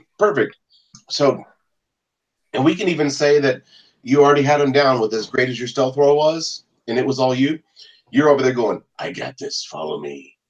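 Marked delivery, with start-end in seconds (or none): 9.0-10.3 low, deep, slow, hushed hero voice. A player leads the group through darkness in a game, in Batman voice. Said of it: "say it in Batman voice".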